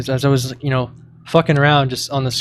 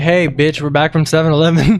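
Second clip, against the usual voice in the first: mock casual holler, mild, easy and called out; 2 semitones higher than usual. Retelling the walk back from 7-Eleven late at night, retelling own yell. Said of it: "I yelled like".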